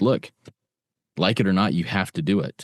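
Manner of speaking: ordinary talk, nothing marked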